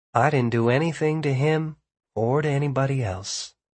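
ordinary delivery

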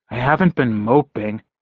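ordinary talk

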